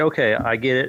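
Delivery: plain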